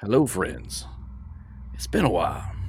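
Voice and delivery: soft, breathy southern drawl. Narrating a cliffhanger, an old friend greets the listeners: Duristan's southern drawl. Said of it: "in a nice southern drawl".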